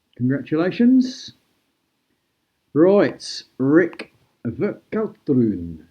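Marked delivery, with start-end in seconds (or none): 3.6-5.7 best-effort put-on Flemish accent on the name, swooping. Announcing a new reserve goalkeeper's name, in the speaker's best flemish accent. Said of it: "That's my best Flemish accent".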